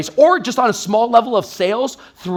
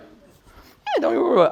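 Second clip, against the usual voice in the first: lamb-like voice, higher and quieter; 6 semitones higher, 4 dB quieter than usual. Showing the first beginner-mode reply to an objection, sounding like a lamb. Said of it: "Be the lamb, right?".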